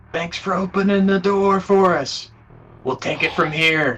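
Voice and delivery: smug, cocky call. Voicing an arrogant Ranger calling through a door: arrogant Ranger voice calling out. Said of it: "You hear a Ranger voice call out".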